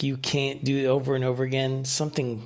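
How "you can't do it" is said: plain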